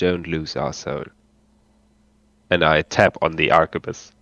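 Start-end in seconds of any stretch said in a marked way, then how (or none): 0.0-1.0 grave, quiet, deadly serious delivery. Stepping closer to him after he apologizes: very serious tone. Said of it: "I turn into a very very serious tone".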